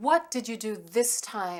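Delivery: accusing tone. Demonstrating a parent's reaction to a child in trouble at school: blaming tone.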